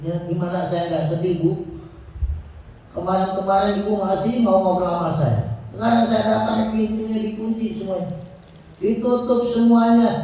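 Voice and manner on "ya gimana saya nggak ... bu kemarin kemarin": ordinary delivery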